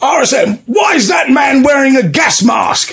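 very high, peevish, complaining shout. Retelling how the brigadier shouted out to the rsm, mock-querulous shout. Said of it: "in a very querulous voice, shouts out".

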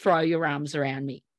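ordinary delivery

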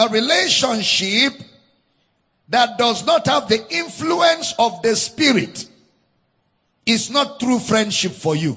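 slow, loud, deliberate word-by-word dictation. Telling listeners to write this point down: slow dictation pace. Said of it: "I'm going to say it slow so you can write down".

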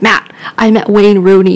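ordinary talk

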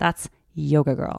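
disgusted, scornful tone, words sound distasteful. Retelling what a girl said as the speaker walked by: imitating a disgusted tone. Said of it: "And she said it with that voice".

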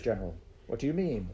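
ordinary delivery, nothing marked

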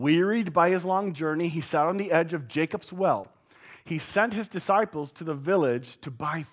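plain

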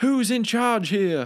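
put-on high, drawn-out, demanding scream. Retelling someone arriving and screaming at the workers: imitating someone screaming. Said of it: "he's screaming at the workers, like".

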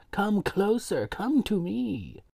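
put-on beckoning voice. Recapping a scene, the speaker imitates Swan calling the guy closer. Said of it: "She literally was like".

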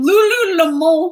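put-on one word said in a French accent. Recalling how someone pronounced the yoga pants brand: french accent on 'lululemon'. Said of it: "With a French accent".

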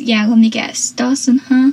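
ordinary delivery

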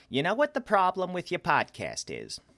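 put-on motherly voice, very high and swooping. Recalling how a mother would start a feedback conversation: mother's voice impression. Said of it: "That's why I used my mother's voice".

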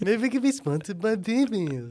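high, cartoonish animated-character voice. Repeating own earlier line to another speaker, imitating own cartoon character voice. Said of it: "Why did I sound like a cartoon character?".

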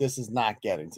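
low, hushed, unbothered, studied nonchalance. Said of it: "desperately trying to show the world".

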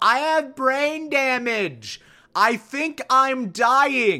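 mock very slow, dragged-out, high yell. Retelling how a man yells out at a girl in a club, retelling a yell. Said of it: "yells out at some girl".

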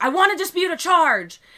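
furious, shrill, very high, very loud demanding scream. Retelling how she started screaming while disputing a charge, imitating someone yelling. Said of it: "starts screaming at me and, like, yelling".

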